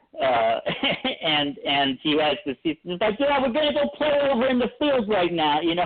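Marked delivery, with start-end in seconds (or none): 3.2-5.6 put-on heavy Brooklyn accent, very high and fast. Quoting a kid heard in an old documentary; thick brooklyn accent. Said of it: "he's got this really thick Brooklyn accent like Newsies".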